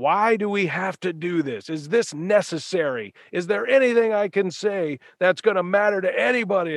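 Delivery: furious, high-pitched, angry shouting. Walking out of the tunnel before the fans, retelling a man screaming at the speaker. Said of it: "he is just screaming at me".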